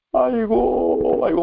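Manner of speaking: high, very slow, drawn-out wailing cry. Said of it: "막 울어요".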